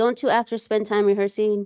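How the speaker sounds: ordinary delivery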